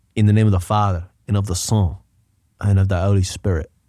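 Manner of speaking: put-on, milder Irish accent. Comparing how a fighter's accent changed with age: older Conor McGregor impression. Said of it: "He got older".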